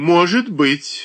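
dry, mildly mocking tone. Narrator reading the father replying to his son: smirking. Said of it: "усмехнулся отец".

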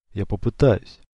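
ordinary delivery

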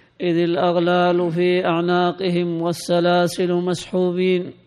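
plain

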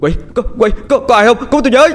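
terrified shout. Narrator reads a panicked man calling out for help, terrified shout. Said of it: "Anh Lục hoảng hồn la lên".

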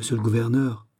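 plain reading voice

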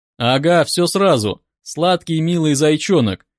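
ordinary delivery, nothing marked

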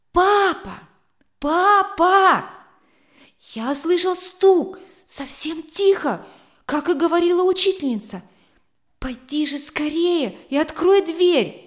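loud, high, urgent, trembling with excitement. A small boy tries to wake his sleeping parents: louder, trembling with excitement. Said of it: "повторил громче, дрожащим от волнения голосом".

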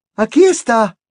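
breathless, very high, gasping voice. A wife hands her husband parchment, ink and a quill: breathless. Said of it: "dijo sin aliento la señora Weasley".

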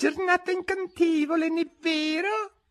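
very high, shy, timid, tiny voice. A small voice at Alice's side in the procession speaks up timidly. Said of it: "Disse timidamente una vocina".

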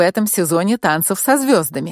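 ordinary delivery, nothing marked

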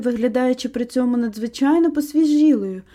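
ordinary delivery

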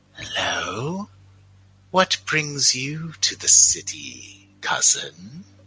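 flabby, swooping toad-like creature voice. A hunched green toad-like creature speaks in the players' minds, toad-like creature voice. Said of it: "like sort of flabby toad-like creatures. A red one and a blue one. Oh. Red one goes faster. As you walk by, a sort of hunched green form, very similar to them, but with like a big staff, comes and".

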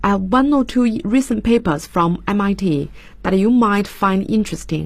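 ordinary talk, nothing marked

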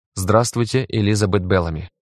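ordinary delivery

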